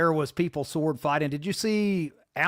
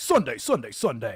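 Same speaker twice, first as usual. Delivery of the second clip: put-on radio DJ voice, much lower; 4 semitones lower than usual. Telling the other speaker he has a DJ voice, imitating a DJ voice. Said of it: "you guys have that DJ voice".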